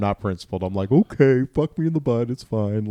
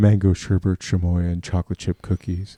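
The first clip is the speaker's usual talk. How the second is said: mocking put-on deep voice, much lower; 4 semitones lower than usual. Retelling what she said, mocking her with a put-on deeper voice. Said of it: "I've been doing that".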